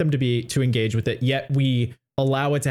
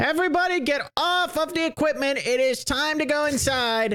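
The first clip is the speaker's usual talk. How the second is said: put-on grating, very high-pitched annoying kid voice; 14 semitones higher than usual. Describing a TikTok creator's bit about the most annoying kid at recess, annoying recess kid voice. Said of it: "But that's how he talks".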